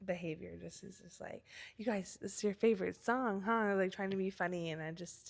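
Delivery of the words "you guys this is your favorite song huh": put-on condescending voice. Retelling what a drunk husband said about the radio: imitating a condescending voice. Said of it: "really condescending".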